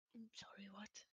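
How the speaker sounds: very quiet sick voice, giving out and fading. Asking another player to repeat something, sick with a disappearing voice. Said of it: "I'm sick, my voice is, like, disappearing".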